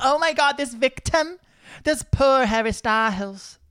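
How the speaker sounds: very high, slow, put-on TV gossip-host accent. Acting out what everyone says, in a put-on gossip host accent. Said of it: "I love that accent".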